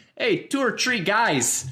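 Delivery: put-on loud, high old Polish dad Chicago accent. Describing the Chicago accent by voicing old Polish dads, old Polish dad Chicago accent. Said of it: "I think of like kind of like old Polish dads".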